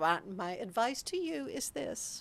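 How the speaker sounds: imitated German accent. Quoting the activities girl's travel advice, imitating a german accent. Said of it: "with her cute little German accent".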